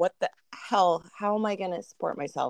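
usual speaking voice

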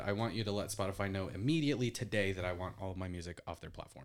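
plain

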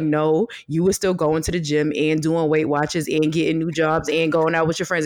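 ordinary delivery

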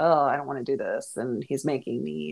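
ordinary delivery

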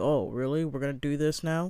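ordinary talk

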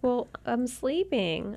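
put-on, fake sleepy voice. Retelling a phone call, imitating Jasmine's fake sleepy voice. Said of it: "acting like she's sleeping".

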